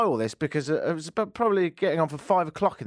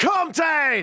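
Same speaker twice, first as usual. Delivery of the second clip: put-on London gangster geezer accent, pitched high; 11 semitones higher, 3 dB louder than usual. Retelling male voices heard in the street early this morning, London gangster accent. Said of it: "that was really London".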